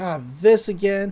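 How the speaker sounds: ordinary delivery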